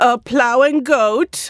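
grave, unhurried, earnest, dead-serious, high and slow. Retelling her dad's answer about a citizenship price: imitating her dad. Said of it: "I will do an impression of him".

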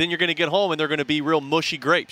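ordinary delivery

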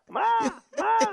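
yelling, high-pitched and loud. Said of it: "they used to yell".

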